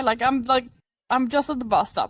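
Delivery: normal talking voice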